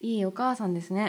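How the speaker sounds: deadpan, flat monotone with no inflection at all. Responding to a listener's message read aloud, in a flat monotone reading. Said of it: "棒読みやめてもらっていいですか".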